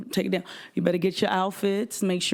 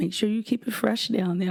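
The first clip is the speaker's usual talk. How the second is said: put-on soft-spoken woman's voice. Retelling advice from the first lady, imitating her soft speech. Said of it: "she would talk real soft".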